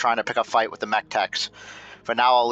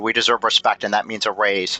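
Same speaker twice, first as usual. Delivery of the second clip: usual speaking voice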